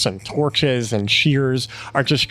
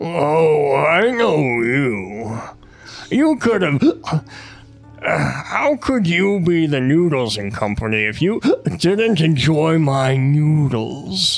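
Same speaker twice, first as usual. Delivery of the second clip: put-on boozy, tipsy, rambling drunken character voice; 3 semitones higher than usual. Game master voices a drunk monk looking up at the five players, drunken. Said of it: "drunkenly looking up".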